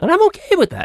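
voice cracking, very high pitch. A longtime podcaster talking about his show, voice cracking. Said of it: "as my voice cracks".

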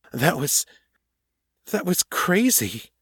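confused, frightened, bewildered, a little angry. Will, catching his breath after running, confused and frightened. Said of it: "sounding confused, frightened, and maybe a little angry with himself".

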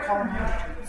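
plain

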